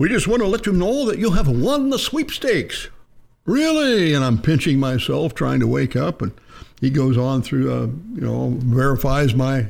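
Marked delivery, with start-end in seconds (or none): 0.0-2.9 put-on loose English accent, higher pitch. Retelling a Saturday morning phone call from a guy, imitating an English accent. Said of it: "a guy with kind of an English accent".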